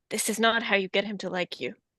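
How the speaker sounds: speaking in a low tone. Showing friends what they plan to say to someone, in a low tone. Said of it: "like a low tone to Cyrus".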